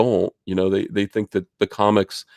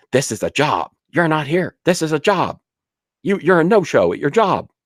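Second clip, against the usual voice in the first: mock, repeated, angry, pitched-up scolding yell; 7 semitones higher than usual. Retelling how Jeremy yells about skipping the show: imitating someone yelling. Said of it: "he does yell at me".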